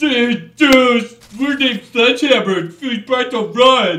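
very loud, high, jokey dude-bro babble. Gamer mocking the game's designers: mocking impression of game designers. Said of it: "That's my impression of you, game designers".

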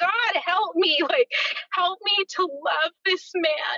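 high, pleading scream, crying out. Speaker retells what they screamed to God after the kids had left, retelling a scream. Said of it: "And I just screamed like".

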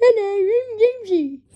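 high, silly homemade sock puppet character voice. Introducing a newly made sock puppet to viewers: Jamesy sock puppet voice. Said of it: "Everyone say hello to Jamesy".

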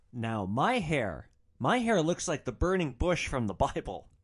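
ordinary delivery

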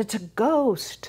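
high-pitched, slow, terrified cry.

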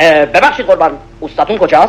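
low polite voice.

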